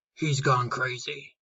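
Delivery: muttering, mumbling. Narrator reads the other Cyclopes going back to their caves: muttering.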